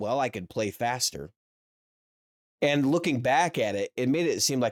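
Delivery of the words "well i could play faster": imitated, sarcastic delivery. Retelling a joke he once made about playing: imitating own sarcastic remark. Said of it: "I was being sarcastic".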